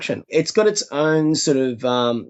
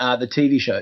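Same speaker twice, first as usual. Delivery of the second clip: normal talking voice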